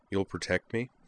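usual speaking voice

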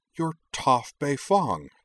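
sudden, high-pitched blurt, as if realizing. Narrator reads a character's sudden realization of who she is meeting, blurted out. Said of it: "she blurted".

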